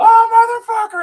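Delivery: very high, very loud, shrill pained howl. Retelling a story, acting out a man screaming once the door shuts, imitating someone screaming. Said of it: "starts screaming".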